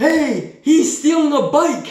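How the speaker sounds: put-on high, childlike, shouting child's voice. Retelling a class moment when somebody shouted out, imitating a child yelling. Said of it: "I tried to sound like a child there".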